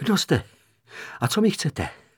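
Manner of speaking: trembling, shaking, quavering voice. A small man, stopped by a hand on his shoulder, speaks in a trembling voice. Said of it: "Zeptal se třesoucím se hlasem".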